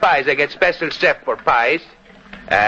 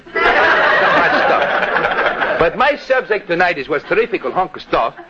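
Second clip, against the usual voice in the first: put-on Greek dialect accent. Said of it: "that Greek dialect of yours".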